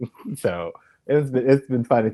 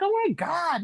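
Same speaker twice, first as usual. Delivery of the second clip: put-on soft, hushed, very high whining; 7 dB quieter than usual. Describing a woman who cracked them up, imitating whining. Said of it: "the whining".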